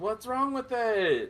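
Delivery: loud, high-pitched yelling. Voicing a character calling out to a companion: yelling. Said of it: "Rory kinda yells".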